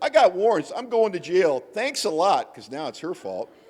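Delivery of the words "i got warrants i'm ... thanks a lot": loud, high-pitched yelling. Retelling how they yelled at their sister about warrants: imitating yelling. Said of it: "so I started yelling at my sister".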